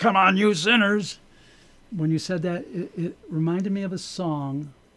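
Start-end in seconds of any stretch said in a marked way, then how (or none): 0.0-1.2 loud, harsh, angry scolding call. Describing the angry voice god doesn't use, in a mock-angry scolding voice. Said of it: "God doesn't use that angry voice".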